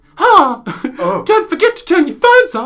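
put-on very high, sing-song, swooping child voiceover. Retelling a theatre voiceover announcement: imitating a child voiceover. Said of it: "it's a kid coming in being like".

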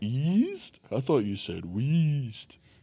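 bad put-on cartoon voice, slow, swooping, "East" drawn out. Mishearing a name, the speaker does a Patrick Star voice. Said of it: "horrible Patrick impersonation".

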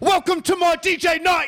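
very high, loud, belted club MC hype call. Answering a request for an impression: loud Idris Elba impression. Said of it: "I wanna hear an Idris Elba impression".

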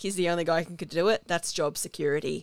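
ordinary talk, nothing marked

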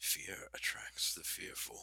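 soft, confident villain whisper. Describing a soft but confident villain voice, demonstrating it as Mark Strong. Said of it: "It's like that soft but confident".

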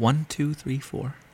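very soft half-whisper close to the mic. Counting in before reading a credit into the mic: half-whispering the count. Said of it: "why you're fucking whispering it into the".

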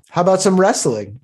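snide, needling, sarcastic mocking tone. Voicing a character who proposes a contest to a knight: sarcastic. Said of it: "a sarcastic expression and just be like".

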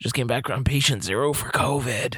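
put-on, unsettling sick-sounding voice. Joking about coming back from Disneyland: imitating Dave's unsettling voice. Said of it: "come back talking like this".

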